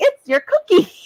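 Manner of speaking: put-on eager, excited kid voice, very high, blurted. Retelling a child's answer in class, imitating an excited child. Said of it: "she raises her hand all excited".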